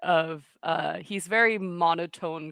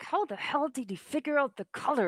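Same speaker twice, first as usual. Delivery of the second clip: soft hushed half-whisper under breath, pitched up; 8 semitones higher, 4 dB quieter than usual. Playing a character who fidgets and eats, muttering to himself: soft half-whisper to himself. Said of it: "softly whisper to himself".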